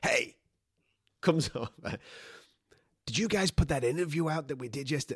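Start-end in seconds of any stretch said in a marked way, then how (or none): 3.0-5.2 put-on American accent. Quoting a man who came over asking about an interview: fake american accent. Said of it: "I don't know why I'm doing a fake fucking American accent".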